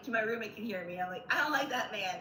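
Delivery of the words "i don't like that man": mock screaming outburst, yelled very loud. Retelling a reaction to men on a show while binge watching: imitating own screaming. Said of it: "I'm screaming".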